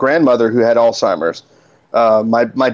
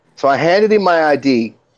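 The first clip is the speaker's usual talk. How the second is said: plain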